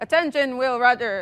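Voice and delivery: robot-like voice. Presenter showing the audience how the demo will sound, Lost in Space robot voice. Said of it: "I have to sound very robotic".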